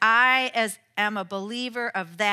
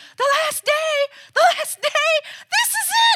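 very high, frantic, rising panicked cry; 8 dB louder than usual. Retelling a cartoon, the speaker acts out Lucy crying out. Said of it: "to which Lucy cries".

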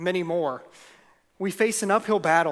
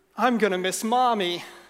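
mock wobbly, trembling, quavering voice; 3 semitones higher than usual. Retelling a daughter's reply, tears in her eyes: imitating a trembling voice. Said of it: "with a tremble in her voice".

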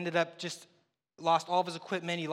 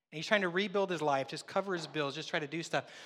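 plain

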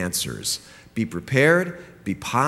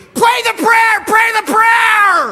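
put-on very high, very loud shrieking child's scream; 11 dB louder than usual. Retelling a son screaming at his little sister: imitating a child screaming. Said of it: "Jonathan starts screaming".

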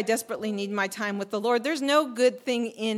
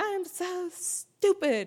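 put-on, high, furious, frustrated scream; 9 semitones higher than usual. Recalling losing it at home, frustrated with herself: retelling her own screaming. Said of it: "I started screaming".

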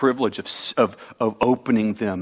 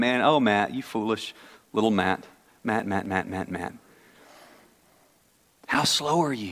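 soft, slow, kindly, gentle chiding tone; 6 dB quieter than usual. The speaker pictures Jesus shaking his head at him, Jesus gently chiding. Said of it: "I just think Jesus shakes his head at me all the time".

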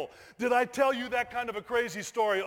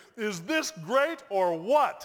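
ordinary delivery

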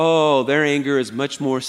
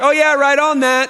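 high, loud, breezy, fake, passive-aggressive tone. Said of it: "This is the passive-aggressive person".

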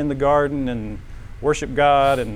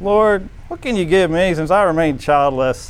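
put-on whine, full of complaint; 4 semitones higher, 4 dB louder than usual. Quoting Abram's plea to the Lord, mock-whiny Abram voice. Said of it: "this is a whiny voice".

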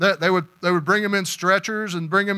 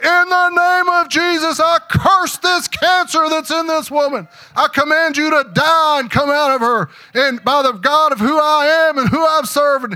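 booming, high, resounding, commanding preacher voice; 8 semitones higher, 6 dB louder than usual. Retelling a healing prayer, speaker voices the voice heard behind the one praying: booming voice. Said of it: "behind him was this booming voice".

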